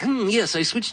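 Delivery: mocking voice pitched very high. Retelling what a bandmate would say walking in: mocking imitation of Dave. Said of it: "he didn't really sound like this".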